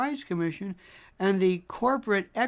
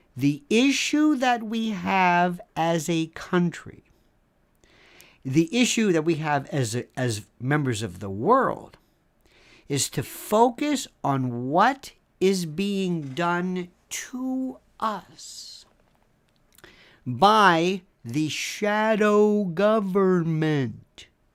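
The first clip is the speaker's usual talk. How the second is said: speaking very slowly and deliberately; 2 semitones lower than usual. Asking listeners to really listen while explaining again, speaking very slowly. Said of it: "I'm going to speak very slowly so you can understand".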